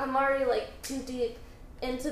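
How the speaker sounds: normal talking voice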